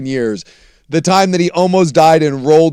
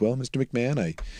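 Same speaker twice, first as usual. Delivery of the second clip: imitated very polite tone, lower and quieter; 3 semitones lower, 13 dB quieter than usual. Retelling a police stop of a famous driver: imitating a very polite cop. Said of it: "the most polite, uh, cop of all time".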